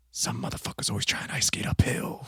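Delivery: very quiet, soft, low whisper.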